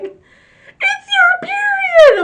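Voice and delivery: piercing, shrill, high-pitched, very loud squealing. Retelling how mom reacted in the bathroom: imitating mom squealing. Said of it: "she starts squealing".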